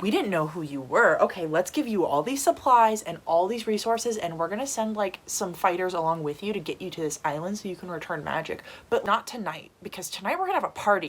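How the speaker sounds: normal talking voice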